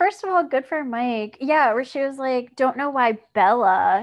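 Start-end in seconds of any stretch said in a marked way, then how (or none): 2.6-4.0 mock sneering voice. Recapping a scene, speaker quotes a girl complaining about Bella; retelling a sneer. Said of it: "she sneered my name".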